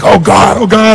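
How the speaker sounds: rapturous, ecstatic moan. Asking an audience member how she sounded at the peak: mock spiritual ecstatic cry. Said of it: "were you get really spiritual?".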